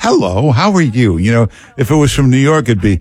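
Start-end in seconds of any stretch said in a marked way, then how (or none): 0.0-1.2 sweet, warm, friendly voice. Greeting a caller from Utah as she sounds: imitating a friendly Utah greeting. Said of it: "You sound so warm and sweet".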